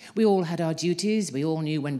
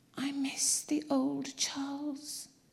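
very high, slow, hushed whisper; 10 semitones higher, 7 dB quieter than usual. Narrator reads Clementina's line in the bedroom at 2:30, whispered. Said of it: "she whispered".

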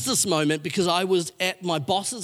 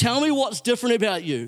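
high, sharp, screaming cry; 5 semitones higher than usual. Retelling a classmate demanding an answer in front of everybody: imitating someone screaming. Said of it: "screamed at the top of her lungs".

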